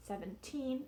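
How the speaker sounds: put-on seventeen with stress on final syllable -teen. Pronunciation lesson on teen numbers: stress final syllable of seventeen. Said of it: "The stress in the teen should be on the second syllable. ... in this case it's the final syllable".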